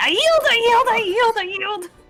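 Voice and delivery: very high, shrill, loud yelling, repeated over and over. Voicing a burning captain on the ground giving up: yelling. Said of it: "and he's yelling".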